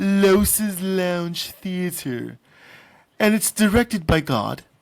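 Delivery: put-on cartoon character voice. Host introducing a new part of the show to the audience, in a Stewie voice. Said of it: "I don't know why I sound like Stewie from American or Family Guy".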